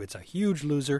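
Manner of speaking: normal talking voice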